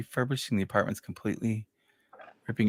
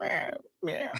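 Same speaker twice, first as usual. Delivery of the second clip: high, soft pathetic little cat meow. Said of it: "this pathetic little voice where she goes".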